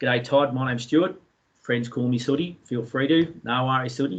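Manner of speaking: ordinary talk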